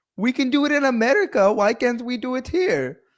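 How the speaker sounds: put-on Indian accent pitched way up. Quoting a Western activist's line, said in an Indian accent. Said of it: "Why did I do that in an Indian voice?".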